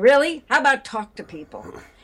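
thick put-on Chicago accent. Retelling a remark, the speaker does a very chicago accent. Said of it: "sounding very Chicago".

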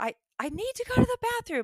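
put-on very high screech of a child, screeching cry. Retelling a child screaming in a changed voice: imitating a screeching scream. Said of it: "screaming, like, and his voice has changed".

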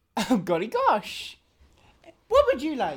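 very low, slow, drawn-out swooping voice. Voicing Chuckles, who looks at a player and asks: Chuckles voice. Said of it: "Chuckles just looks at you and goes".

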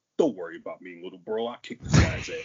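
loud, cocky, swaggering tough-guy voice with big swings. Describing the typical voice of an actor playing a brother in a film, mock-cocky tough-guy voice. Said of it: "typical, like, cocky".

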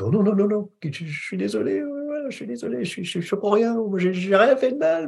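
tiny, high, meek, shrinking voice. Showing how the victim character inside speaks: small voice, playing the victim. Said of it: "je me fais tout petit dans ma petite voix".

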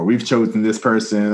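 ordinary talk

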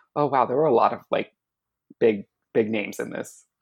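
normal talking voice

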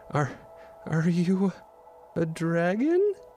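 stammering. Seeing a huge three-headed dragon appear from the mist, she asks it; stammering. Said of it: "May stammered".

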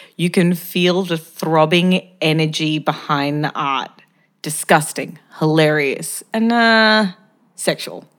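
ordinary talk, nothing marked

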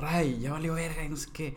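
loud, called-out shout. Retelling how Fofo shouted to everyone, retelling Fofo's shout. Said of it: "Fofo le gritó a todos".

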